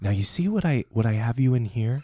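soothing, gentle painter-style voice.

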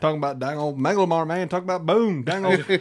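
put-on rapid cartoon-style mumble. Praising Boomhauer's flashbacks, then talking like him: Boomhauer's fast mumbled talk. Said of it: "Can you slow that down?".

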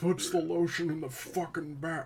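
character voice with pitch dropped way down. Trying out voices for the podcast, Buffalo Bill voice. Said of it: "that's a bit too Buffalo Billy".

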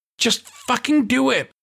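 sharp, fiery, very high snap. A nurse turns on a paramedic who won't do what she asks, snapping. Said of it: "she snapped".

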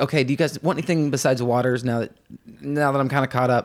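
ordinary talk

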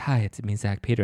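put-on sexy radio voice. Greeting listeners of the podcast: put-on sexy radio voice. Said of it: "this is my sexy radio voice".

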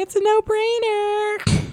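very high-pitched put-on motherly voice. Quoting what she calls a no-brainer, imitating a mom's voice. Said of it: "in that mom voice".

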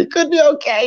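doubtful-sounding, voice jumping very high. Repeating own earlier words to show doubt, voice getting higher. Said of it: "my voice got higher".

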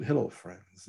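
very soft, hushed announcer voice close to mic. Imitating a golf announcer who talks a little under: Jim Nantz voice. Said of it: "you're talking like this".

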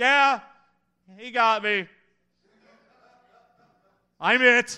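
put-on glum, dejected yell, very slow, drawn out, high. Retelling how another voice answered from the woods: imitating a dejected yell. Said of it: "dejected, yelling".

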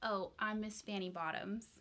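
straight-faced, no giggle. Player giving their character's name when asked, without a giggle. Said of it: "you said that without a giggle".

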